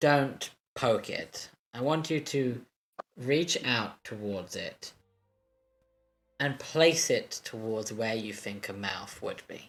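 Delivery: low, hushed half-whisper. Game master voicing a character who leans over to a player, half-whispering. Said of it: "she whispers to you and she goes".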